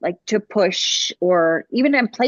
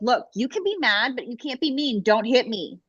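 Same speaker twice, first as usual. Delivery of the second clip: mock stern, firm scolding tone; 4 semitones higher, 4 dB quieter than usual. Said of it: "I have to be mad at her".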